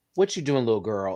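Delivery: scolding, telling-off tone. Showing the tone the speaker's dog knows means trouble: scolding tone to a dog. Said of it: "she knows this tone".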